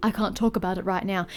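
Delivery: ordinary talk, nothing marked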